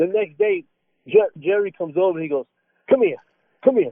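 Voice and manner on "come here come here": mock-serious tone, higher. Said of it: "trying to be serious".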